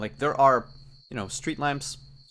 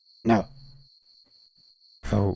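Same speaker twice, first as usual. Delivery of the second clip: heavy croak on every word; 3 semitones lower, 3 dB louder than usual. Storyteller voices the unblinking thing that smells like a dog, very croaky voice. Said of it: "in a very croaky voice".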